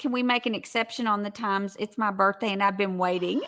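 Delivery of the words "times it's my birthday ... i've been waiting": normal talking voice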